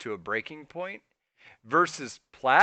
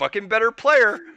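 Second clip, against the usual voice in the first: put-on frustrated gamer voice, higher and louder; 9 semitones higher, 7 dB louder than usual. Imitating a friend complaining mid-game that an opponent deserves to win. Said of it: "This is my Michael impression".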